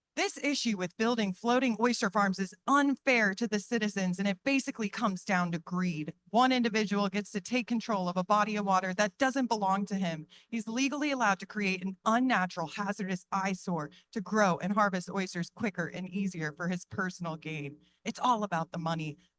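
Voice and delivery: ordinary talk, nothing marked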